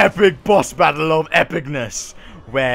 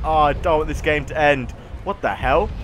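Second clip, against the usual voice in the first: ordinary delivery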